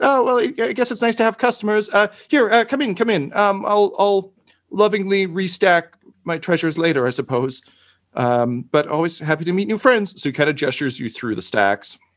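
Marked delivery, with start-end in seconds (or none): 0.0-10.2 tiny cherubic character voice, much higher. Narrator voices a shopkeeper welcoming customers into his cluttered shop, tiny cherubic voice. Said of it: "little tiny guy, just like adorable, just like very cherubic".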